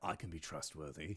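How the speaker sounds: very deep, hushed grumbling mutter under the breath. A player voices his character going into the portal, grumbling under his breath. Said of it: "grumbling under his breath".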